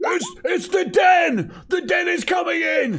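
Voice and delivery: acted panicked, terrified scream. Reacting in character to fog pouring out, in-character panicked scream. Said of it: "I think I'm screaming".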